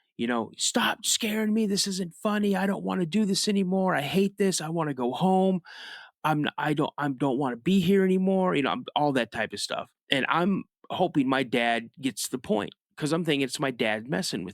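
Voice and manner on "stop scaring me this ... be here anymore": put-on high, frightened, pleading yell. Retelling standing up in a deer stand and yelling at their dad: retelling a scared yell. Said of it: "I'm yelling at my dad".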